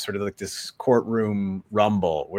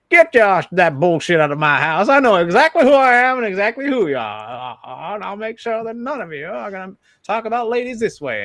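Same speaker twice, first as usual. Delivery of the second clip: put-on no-nonsense Southern lady voice, higher and louder; 12 semitones higher, 6 dB louder than usual. Imitating a senator character putting men in their place: Lillian DeHaven voice. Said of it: "a no-nonsense Southern lady".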